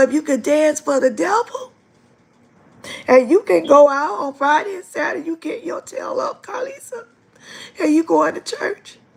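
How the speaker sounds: stern, strong-minded father voice. Quoting what her father used to tell her when she was young, imitating her father. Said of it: "he used to say".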